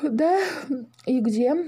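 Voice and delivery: said through a yawn. Woken at night by the little dragon, the father answers; yawning. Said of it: "зевнул Паша".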